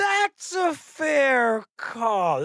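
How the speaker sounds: high, very slow, drawn-out smug AI assistant voice. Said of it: "speaking to you like that".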